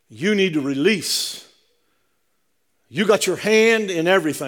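put-on smooth South African preacher's delivery. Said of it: "It was way smoother than what I'm saying".

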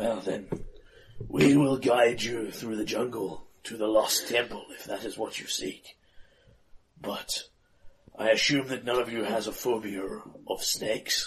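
put-on aged, wizened old man's voice. Game master voices the old chief offering the players a guide: wizened old man voice. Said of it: "And you are taken to this man, who is a wizened old man wearing a very withered, very feathered headdress. / And you are taken to this man, who is a wizened old man wearing a very withered, very feath".

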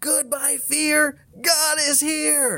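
very high, drawn-out, top-of-the-lungs yell. Retelling a daughter's yell while riding a bike: imitating a child yelling loudly. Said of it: "she's yelling at the top of her lungs".

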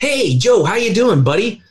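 lively, energetic tone. Contrasting a slumped person with an upright one, the speaker demos an energetic and vibrant greeting. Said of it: "somebody that's energetic and vibrant".

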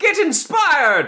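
tiny, very high pixie voice, shouting. Running a game, the speaker voices a pixie calling to a player, small pixie voice shouting. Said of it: "the small voice of a pixie shout".

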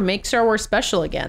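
ordinary talk, nothing marked

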